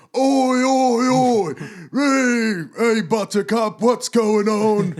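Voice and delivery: rowdy, very high, very slow, drawn-out hollering. Retelling rugby fans going down the street: imitating rugby fans yelling. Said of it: "yelling at people on the street".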